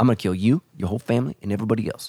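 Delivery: tough New Jersey mafia gangster voice. Illustrating how the ancient world worked, in a mafia voice. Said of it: "That's my best mafia voice".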